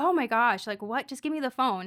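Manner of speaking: put-on frustrated outburst. Retelling how the other person reacted when asked for the phone: imitating a frustrated person. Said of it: "getting frustrated".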